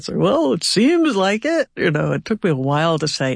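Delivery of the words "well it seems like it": high, slow corn pone voice. Retelling own past interview answers in a put-on corn pone voice. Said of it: "the voice of, uh, a, like, a corn pone guy".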